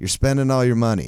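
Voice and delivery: ordinary talk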